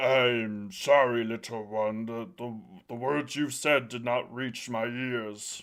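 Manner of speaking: deep, towering voice of a huge stone giant. A game master voices a man responding to a player's character, deep voice. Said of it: "a deep voice responds".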